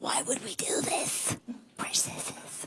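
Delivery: very quiet, whispered cave creature voice. Radio host noticing he talks like Gollum when saying we, Gollum voice. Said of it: "I feel like I'm talking like Gollum".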